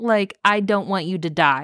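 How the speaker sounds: ordinary delivery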